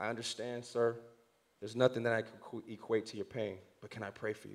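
very quiet, hushed, barely audible whisper. Retelling asking a grieving father if he may pray: retelling a whisper. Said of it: "And I whisper in his ear".

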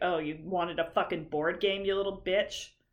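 mock judgmental-sounding therapist voice. Retelling how the therapist said a line: imitating a judgmental-sounding therapist. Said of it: "The way she said it sounded like".

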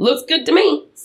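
totally sure of himself. Retelling a film scene, acting out the hero signing: imitating a confident line. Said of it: "Says it so confidently, too".

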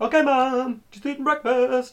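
very high, shrill, loud voice, very slow and stretched. Retelling a film scene, doing a Frankie Muniz impression. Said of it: "Can I make Frankie Muniz impression?".

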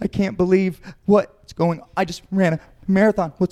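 high, put-on frantic, alarmed panic with disbelief. Imitating a marathon runner after one round of jiu-jitsu: imitating someone panicking. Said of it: "they're panicking".

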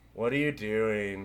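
utterly deadpan, very low voice. Speaker retells a girl walking over to a strange scene, imitating a girl's deadpan. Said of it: "totally deadpan".

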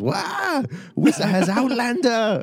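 very high, drawn-out, swooping shriek. Voicing a startled Gungan who spots the intruder: screaming Gungan voice. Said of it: "and he screams".

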